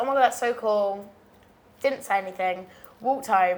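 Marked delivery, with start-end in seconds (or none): none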